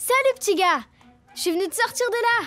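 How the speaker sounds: cheeky, energetic, excitable little dog voice. In a film trailer, a dachshund character greets a trapped little guy, Liberty voice. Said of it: "une petite teckel futée et pleine d'énergie dans le film [name] qui sortira le 11 août au cinéma".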